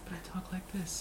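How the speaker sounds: quiet, gentle whisper.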